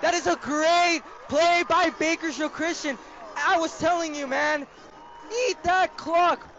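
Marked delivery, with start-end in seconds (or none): 5.5-6.4 voice breaking and cracking in the middle of a word. Calling a football game, urging the team on, voice cracking. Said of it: "Voice crack".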